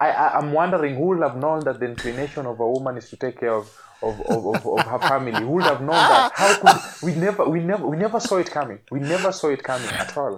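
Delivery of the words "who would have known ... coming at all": heavy sarcasm, feigned disbelief, high and swooping pitch. Talking through a Bible passage with another speaker: sarcastic. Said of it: "that is sarcasm".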